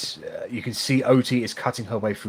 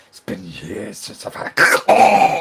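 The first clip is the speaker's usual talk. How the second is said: louder, out-of-breath, panting villain voice; 9 dB louder than usual. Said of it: "you're out of breath".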